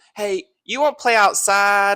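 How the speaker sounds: tiny, very high, slow little country drawl. Retelling a phone call where he asks the speaker to play outside: country little voice. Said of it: "he's got like the countryest little voice".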